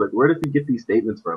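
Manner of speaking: ordinary talk, nothing marked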